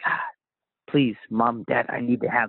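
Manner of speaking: put-on begging, pleading tone. Retelling asking parents for a new model: imitating own past begging. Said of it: "I begged my parents".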